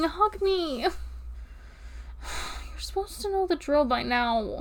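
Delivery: pleading through tears, crying. Saying goodbye to someone known since kindergarten, asking for a hug, crying. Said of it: "I'm crying".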